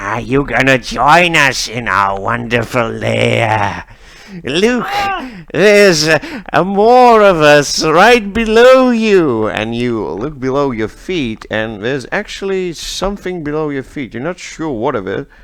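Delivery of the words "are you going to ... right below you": slow, drawn-out, shrieking monster creature voice. A game narrator voices a stranger turning into a creature, in a monster shriek. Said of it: "he shrieks something like".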